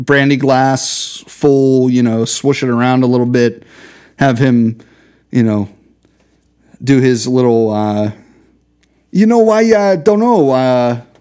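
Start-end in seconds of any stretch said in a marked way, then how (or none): 9.1-11.0 terrible, fumbling, hesitant celebrity voice, pitched up. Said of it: "that was a terrible Christopher Walken".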